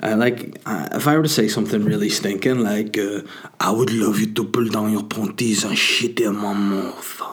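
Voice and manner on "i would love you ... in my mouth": mock seductive, suggestive, put-on sexy voice. Showing how a crude line sounds said seductively: put-on sexy voice. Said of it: "It sounds, oh, a bit sexy there".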